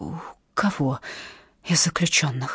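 soft, hushed half-whisper. Narrating, the storyteller sits up in bed and asks a question, half-whispered. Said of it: "прошептала я".

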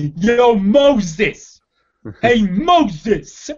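put-on loud, called-out New Jersey accent. Discussing a movie's casting, doing John Turturro's New Jersey accent. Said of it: "You can just say Moses in a New Jersey accent".

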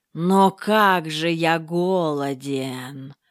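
hissing words in a snake-like voice. Narrator reads a serpent's line; hissing. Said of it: "прошипел змей".

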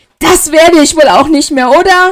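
furious, very loud, high-pitched screaming outburst. Ginevra answers Severus, screaming at him. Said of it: "schrie sie".

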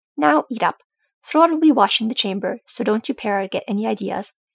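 usual speaking voice

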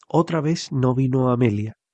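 ordinary delivery

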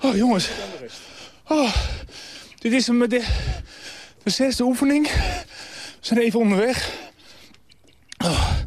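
out of breath, panting between words. Leading a group through an exercise session, talking to them mid-workout, out of breath. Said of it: "ik ben buiten adem".

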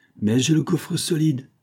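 high, bitter, defiant exclamation. Bernard, beating his chest, answers the woman he says expects his death, crying out. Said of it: "s'écria-t-il en se frappant la poitrine".

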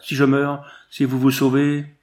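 crying out. Narrator voicing Jean-Paul as the group says goodbye, exclaiming. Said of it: "Jean-Paul s'écria".

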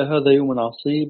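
plain

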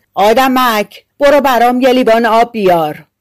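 yelling in a giant's voice. The giant shouts an order at the tailor: shouting. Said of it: "غول فریاد زد".

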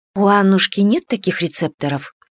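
plain

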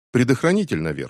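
ordinary delivery

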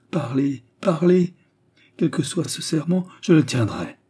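joyful, high, eager urging tone. The marquis answers the woman who speaks of a terrible oath: joyful. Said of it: "Dit-il avec joie".

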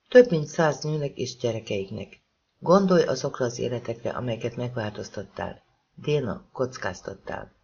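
plain

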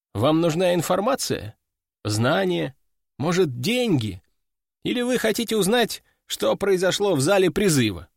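plain

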